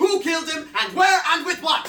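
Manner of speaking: full-throated, loud, high-pitched shout. In a scene, addressing the whole group after being asked something, shouting. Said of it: "There's no need to shout!".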